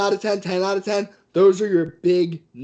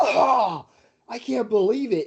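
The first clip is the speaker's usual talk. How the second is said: high-pitched, disgusted, sickened play-by-play announcer call; 5 semitones higher than usual. Imitating Joey Styles' call, sounding so sick. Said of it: "He sounded so sick".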